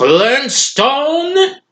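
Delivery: very high cartoon voice, swooping upward. Showing a better impression of the cartoon boss: Mister Slade impression. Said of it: "I can do a better impression of him".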